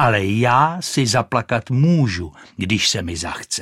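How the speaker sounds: ordinary delivery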